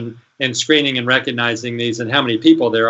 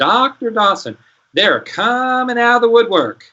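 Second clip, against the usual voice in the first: put-on very high-pitched Southern accent; 11 semitones higher than usual. Retelling a late-night phone call from a caller: imitating a Southern voice. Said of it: "this guy with a real Southern voice says".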